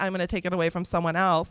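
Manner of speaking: ordinary talk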